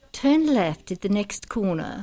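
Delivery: sat-nav GPS navigation voice. Speaker told a friend voices the GPS in Australia, imitating it: GPS navigation voice. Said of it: "like the voice of the GPS cars in Australia".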